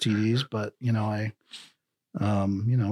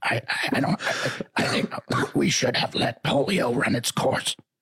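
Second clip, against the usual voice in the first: put-on strained, slow speech. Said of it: "your R F K impression".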